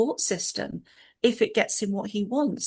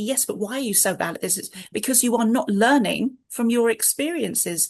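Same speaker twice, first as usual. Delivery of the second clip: ordinary talk, nothing marked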